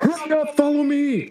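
shrill, very high, drawn-out yell. Voicing a soldier who appears and urges the group to follow: soldier yelling. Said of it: "and he just yells".

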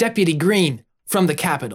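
put-on generic young man character voice. Trying out a new deputy character's line: standard young man voice. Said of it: "that's our standard young man voice that I can do".

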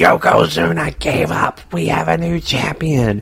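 raspy, rough, high, stretched-out screaming. Describing how the match ends, imitate Vince McMahon screaming on commentary. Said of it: "he starts screaming".

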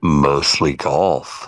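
very low, gravelly gargoyle-like voice. Asked to sign off the pod after an hour, answering in a gargoyle-like voice. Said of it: "sound like goddamn fucking Shrek gargoyle".

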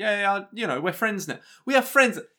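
keen, eager, friendly, enthusiastic delivery. Retelling what an italian chef at a hostel said, imitating enthusiastic speech. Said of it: "He was very enthusiastic".

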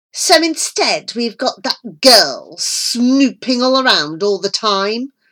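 sharp, biting, snapping. A woman in a rage retorts to a man's excuse, snapping. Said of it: "Millington snapped".

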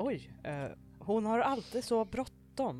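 muttering sarcastically. Narrating a story, a character mutters into the phone after another leaves: sarcastic mutter. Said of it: "mumlar Kim. Lite så här sarkastiskt".

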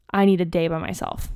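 plain

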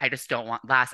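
words said while sobbing. Retelling a panic backstage before a competition: imitating her own sobbing. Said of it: "I was sobbing".

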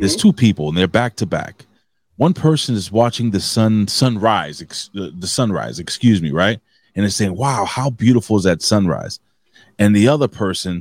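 ordinary talk

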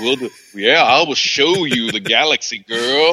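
put-on creepy old man voice. Imitating a character from a film scene: creepy old man Lando voice. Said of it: "he was being like a creepy old man".

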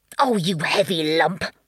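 sputtering, spluttering through the words. Bath Bunny drags the fainted Current Bunny back to shore, spluttering. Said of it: "He spluttered to Current Bunny".

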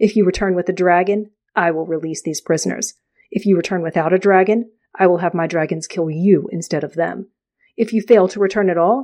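plain reading voice

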